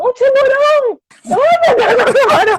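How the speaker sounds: sudden very high-pitched, loud yell. Retelling a shark scare in the water: imitating someone shouting. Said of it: "alguém grita assim".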